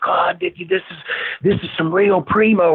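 big, heavy put-on Southern drawl. Retelling a man's reaction to the weed they grew: big Southern drawl. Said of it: "he had that big Southern drawl".

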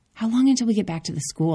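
tight, fast, clenched, panicked voice. Narrator, needing the bathroom, asks Melissa a question: tight, panicked voice. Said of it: "my voice clenching with panic".

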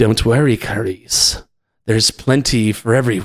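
in-character sociopathic cannibal villain voice. Speaker demonstrating another voice from their library, Hannibal Lecter voice. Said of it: "Hannibal Lecter".

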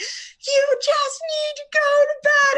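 very high-pitched, loud screaming. A mother retells jumping in the room of a child who won't nap: retelling her own screaming. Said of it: "Or like screaming".

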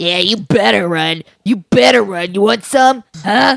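loud, swaggering, suddenly all-tough tough-guy bravado. Game master voicing Poe as an ogre runs off, in Poe's tough-guy bravado. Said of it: "He's suddenly all tough".

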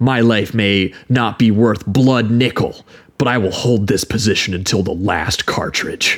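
mock-serious, grave, solemn put-on delivery. Mocking a British actor playing an American general, mock-serious delivery. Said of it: "he's delivering this very seriously".

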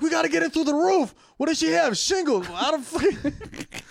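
frantic, panicked tone.

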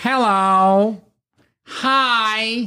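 very slow stretched words. Imitating how Neil talks when he speaks to them: imitating Neil's way of talking. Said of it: "That's what he sounds like".

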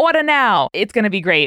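salesman-style Long Island accent. Plug your show's merch to listeners in a car salesman Long Island voice. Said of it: "I'm doing my car salesman Long Island voice".

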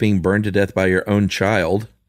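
ordinary delivery

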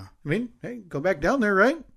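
breezy, dismissive aside. In conversation, brushing the point aside, said dismissively. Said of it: "I say that dismissively".

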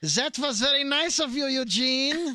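put-on high-pitched German accent. Repeating Hitler's line to another character, in a put-on German accent. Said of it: "How's that?".

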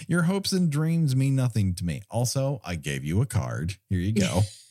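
ordinary delivery

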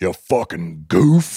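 mock, angry and hostile tone. Retelling how people there say the insult: imitating an angry insult. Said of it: "they'd say it like really fucking goof".

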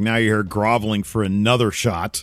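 normal talking voice

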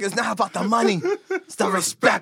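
put-on spoken with an Irish accent. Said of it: "the Irish accent".

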